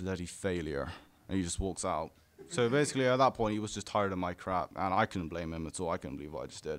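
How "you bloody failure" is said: grave, gravelly, gritty, serious voice. Retelling what he said before walking out, imitating a gritty, serious voice. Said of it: "he has this really like gritty, serious voice".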